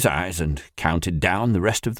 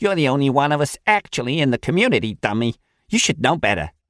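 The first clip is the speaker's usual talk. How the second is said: put-on strong, agitated New York Bronx accent; 3 semitones higher than usual. A woman cuts off a man and scolds him, her Bronx accent coming in strong. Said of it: "Her new Bronx accent came in strong".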